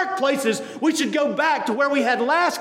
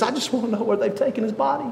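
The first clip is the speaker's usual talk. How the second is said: put-on tearful, weeping voice. Retelling the woman's words at the grave to Christ: imitating someone weeping. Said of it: "in weeping".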